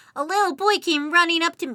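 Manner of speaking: put-on small child's voice. A streamer starts telling viewers a bad joke, in a kid voice. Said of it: "Why am I using my kid voice?".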